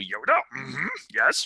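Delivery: little character voice, pitch swooping around. Retelling how she does her own little Yoda impression: imitating a Yoda impression. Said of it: "she has her own little Yoda impression".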